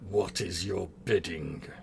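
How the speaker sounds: low, grudging, irritated, angry demon voice. Voicing a demon's reply, begrudging, angry demon voice. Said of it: "very sort of begrudging and sort of angry voice from the demon".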